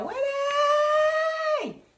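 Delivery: very high, long, drawn-out, stretched scream. Retelling a show scene where a character runs after Winnie: screaming like Forrest Gump. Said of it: "Screaming like Forrest Gump".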